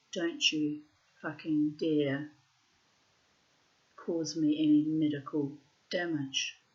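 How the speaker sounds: ordinary talk, nothing marked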